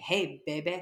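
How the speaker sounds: put-on creepy old-man voice. Retelling what a woman heard in a dressing room, imitating a creepy old man. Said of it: "I hear a creepy old man saying".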